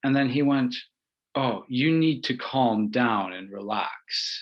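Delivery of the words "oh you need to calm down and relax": put-on slow, angsty, controlling tone. Retelling what a former friend said to calm the speaker: imitating an angsty tone. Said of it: "he said it in a really angsty way".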